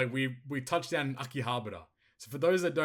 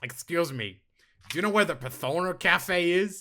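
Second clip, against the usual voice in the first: high, loud, extreme nerdy voice; 5 semitones higher, 6 dB louder than usual. Retelling what a guy who walked up said, imitating a nerdy guy's voice. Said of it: "this was his voice as well".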